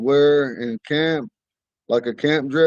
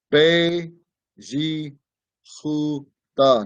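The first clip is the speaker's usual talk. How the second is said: slow, careful pronunciation. Teaching a word so the listeners can hear it: saying it slowly. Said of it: "I'm trying to say it slow".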